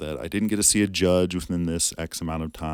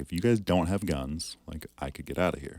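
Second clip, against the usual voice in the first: imitated flat deadpan delivery. Retelling a warning said to a therapist: retelling own deadpan remark. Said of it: "dead face to her".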